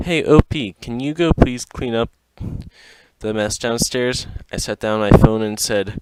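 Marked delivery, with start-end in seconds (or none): none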